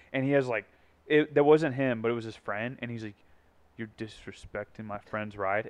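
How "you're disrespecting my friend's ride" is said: very quiet, low-key, menacing tone. Retelling a stranger's quiet warning about a car: imitating a scary menacing line. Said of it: "anyone that says it like that, you know that that's scary".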